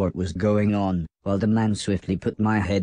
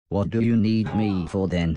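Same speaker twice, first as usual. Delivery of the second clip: ordinary delivery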